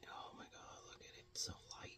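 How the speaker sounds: soft, tense, hushed whisper. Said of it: "I'm whispering 'cause I feel really tense".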